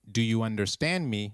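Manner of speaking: ordinary delivery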